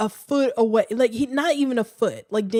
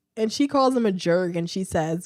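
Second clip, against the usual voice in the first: ordinary delivery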